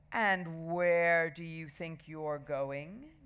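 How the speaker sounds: slow, dreadful, fearsome voice. A voice stops Henry and Ralph as they race through crowds: terrible voice. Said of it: "Came a terrible voice".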